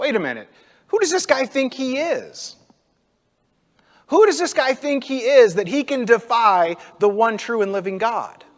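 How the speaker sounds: mocking scoff. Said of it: "kinda mocks him".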